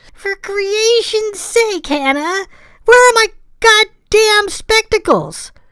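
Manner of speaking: rather whiny, nasal. Narrator reading a man's complaint to Hannah, nasally and rather whiny. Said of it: "came a nasally, rather whiny voice".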